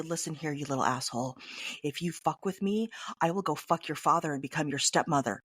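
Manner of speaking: low, menacing, threatening scary voice up close. Suggesting what to say to someone else's kid who burned you, in a scary voice. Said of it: "you get that scary voice and you say".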